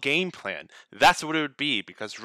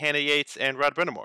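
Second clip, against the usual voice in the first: ordinary talk, nothing marked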